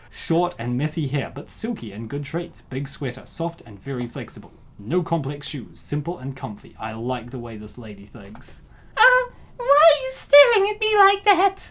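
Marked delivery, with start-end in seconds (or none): 9.0-11.8 very high, very loud, sweet angelic voice. Voicing a character's line while reviewing her, in Pansy's angelic voice. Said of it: "I didn't capture the angelic voice of Pansy".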